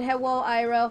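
ordinary talk, nothing marked

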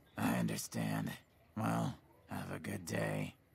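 very low, grave, solemn and somber voice. Voicing a reply in a game conversation: somber voice. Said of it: "Why did your voice change? You got all somber".

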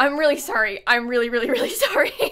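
trembling, shaking, flustered voice. Apologizing to viewers at the end of a stream, shaking. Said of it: "I'm shaking".

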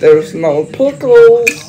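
voice done like a cartoon. Speaker tries to do a cartoon character impression: Bubble Bass impression. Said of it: "I tried to do an impression of bubble bass".

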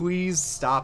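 sudden, plain, real-sounding human shout. The speaker quotes what Karn shouts when attacked: retelling Karn's shout. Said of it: "he just shouts".

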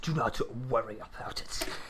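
very low, soft, robotic general-like voice. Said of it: "Why are you doing, like, a Grievous voice?".

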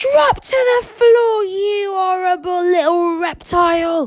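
very high, booming, drawn-out, commanding yell. Narrator reads Stoic's line to the dragon Toothless, yelled. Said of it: "yelled Stoic".

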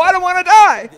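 high-pitched mock pleading wail.

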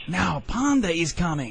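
hissed, hissing voice. Slipping off into the grass as a loud noise sounds, he warns, hissing.

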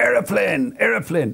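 high-pitched shouting.

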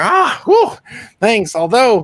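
very high, small gnome voice. Voicing a gnome who brings out ale: gnome character voice. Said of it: "And he comes out and he's like".

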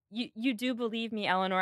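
ordinary talk

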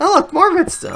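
voice breaking very high, cracking exclamation. Player finding more redstone down in their mine, voice cracking. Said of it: "My voice just cracked".

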